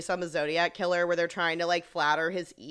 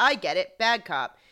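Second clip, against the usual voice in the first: ordinary delivery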